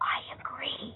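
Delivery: whispered under the breath, soft and breathy. Retelling what classmates said after class: imitating a whisper. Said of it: "in a whisper".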